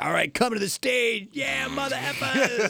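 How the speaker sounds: very high, drawn-out strip-club announcer voice. Joking about how not to announce the awards: strip club announcer voice. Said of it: "You have a great strip club announcer voice".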